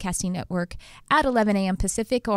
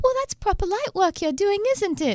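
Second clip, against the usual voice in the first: put-on very high-pitched British accent; 12 semitones higher than usual. Retelling a spiritual teacher's compliment about the show: imitating Nikki Sutton's British accent. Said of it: "British accent".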